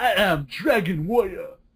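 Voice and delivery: caricatured, put-on Japanese accent, pitched high. Joking about fake Japanese voices, saying the line in a put-on Japanese accent. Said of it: "our racist Japanese voices".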